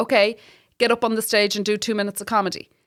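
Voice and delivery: ordinary talk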